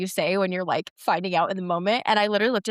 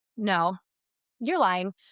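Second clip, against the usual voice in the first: ordinary talk, nothing marked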